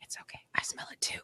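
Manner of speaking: quiet, soft, breathy whisper under the breath. Retelling a story, voice a sprinter catching up with her, retelling a whisper. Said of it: "he whispers".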